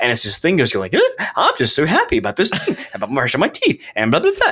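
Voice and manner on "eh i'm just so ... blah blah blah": high, swooping, happy, excited creature voice. Imitating the thing heard in a creepy game corridor: pumped, happy creature voice. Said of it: "so pumped".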